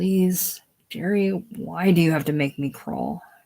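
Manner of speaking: hushed begging. Reading a scene, begging a brother-in-law for work: even quieter pleading voice. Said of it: "Lowering his voice even more".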